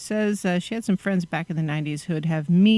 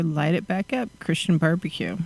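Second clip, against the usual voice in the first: ordinary delivery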